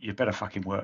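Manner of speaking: muttered under breath. Narrating a character looking at his huge sword, muttered under breath. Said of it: "you can hear him mutter under his breath".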